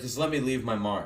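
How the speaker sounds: plain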